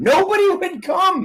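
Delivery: high, whiny, pained injured guy voice.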